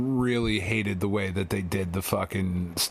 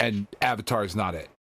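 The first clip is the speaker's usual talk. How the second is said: ordinary talk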